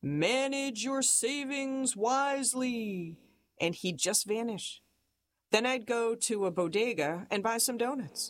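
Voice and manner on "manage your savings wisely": cryptic, mysterious voice, slow and high-pitched. Recalling a caped stranger lurking by a comedy club corner: mysterious voice. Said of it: "he'd say in this mysterious voice".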